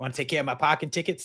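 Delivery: bad, terrible put-on New York accent. Quoting a woman from a film's Albanian sequence, in a terrible New York accent. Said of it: "That's a terrible New York accent".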